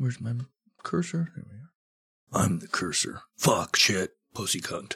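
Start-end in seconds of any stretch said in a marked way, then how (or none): 2.4-5.0 macho action-hero voice, lower and quieter. Speaker jokes while working at the computer, in a Duke Nukem voice. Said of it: "I just sounded like Duke Nukem".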